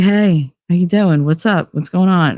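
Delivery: mock wired, overexcited, super hyper delivery. Retelling an early Saturday phone call, imitating Billy super hyper. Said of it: "super hyper".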